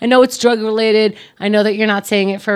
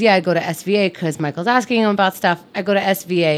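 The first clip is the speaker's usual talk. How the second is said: ordinary delivery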